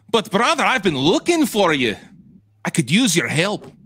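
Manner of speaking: cartoon-style Scottish accent. Playing a role and speaking to a brother, in a DuckTales Scottish accent. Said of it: "DuckTales Scottish accent".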